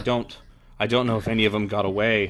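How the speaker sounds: normal talking voice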